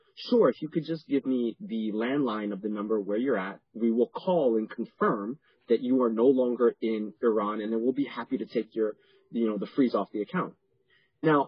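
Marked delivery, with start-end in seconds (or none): none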